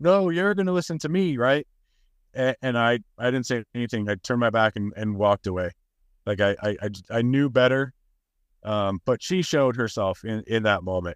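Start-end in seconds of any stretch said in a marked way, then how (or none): 0.0-1.7 mock high-pitched screaming at the top of lungs. Retelling how an ex's mom shouted during an argument: imitating someone screaming. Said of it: "She screamed at the top of her lungs".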